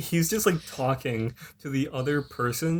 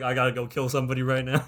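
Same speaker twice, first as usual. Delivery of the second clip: ordinary delivery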